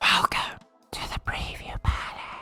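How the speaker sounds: spooky voice. Announcing the name of the preview palace segment: eerie voice. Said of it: "that was an eerie voice".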